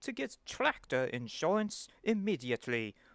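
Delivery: put-on English accent from Britain. In a tractor insurance ad skit, a voice urges getting insurance, in a British accent. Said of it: "why am I British now?".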